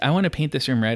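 ordinary delivery

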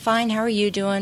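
slight put-on British accent. Retelling a man who sat next to him answering a greeting, little British accent. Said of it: "with his little British accent".

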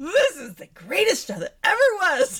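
loud, high, swooping, gushing hyped-up rave. Retelling own reaction to an episode of a show: retelling own excited outburst, loudly. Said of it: "But you guys stop clipping".

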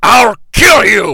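charging robot-like yell. Retelling a film scene where Optimus Prime rides in: imitating Optimus Prime yelling. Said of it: "rides into the frame and yells".

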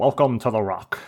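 celebrity-style voice shifting into newsreader voice. Admitting he is bad at voices, the speaker attempts a bad Sean Connery impression. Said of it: "You don't really sound like Sean Connery".

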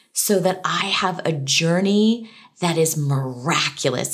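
plain

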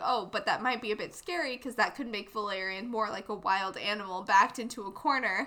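normal talking voice

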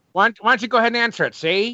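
put-on old-timey, old-fashioned way of talking. Bantering back at a co-host, speaker answers in an old-timey voice. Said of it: "If you're going to go old-timey on me".

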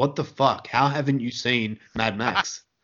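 ordinary talk, nothing marked

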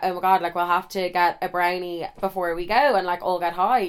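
normal talking voice

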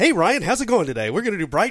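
bright, cheery, very high and very loud. Starting trivia by greeting Ryan in a bright morning voice. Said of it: "I'm going to do this in my bright morning voice".

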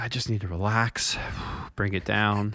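mock voice of calming down, relaxing. Teasing the other speaker about the intro: imitating someone calming themselves down. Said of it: "you sounded really like".

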